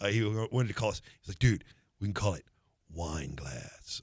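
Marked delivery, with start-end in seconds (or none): 1.4-4.0 slow, unhurried, drawn-out voice. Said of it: "I could literally hear [name] saying that".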